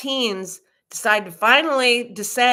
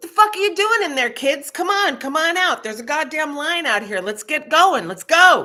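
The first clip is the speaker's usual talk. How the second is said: loud, pitched-up drill-sergeant holler; 7 semitones higher than usual. A speaker retelling calling kids out to a waiting line, retelling own yell. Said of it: "or I yell out loud".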